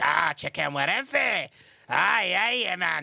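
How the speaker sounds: put-on Scottish accent on "aye, aye". Imitating how a Scottish speaker talks: imitating a Scottish accent. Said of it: "but you're Scottish, so y-, you're like".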